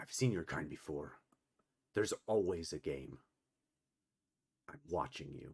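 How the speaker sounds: deep, low male voice in half-whisper. Voicing a character who then lets the player go, in a deep male half-whisper. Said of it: "whisper that in a male voice, in a deep male voice".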